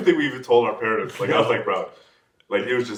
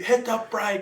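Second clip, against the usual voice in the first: acted very high, urgent shouted yell; 12 semitones higher, 3 dB quieter than usual. Retelling yelling at the driver to brake as the car slid, retelling a yell. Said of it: "I'm yelling at him".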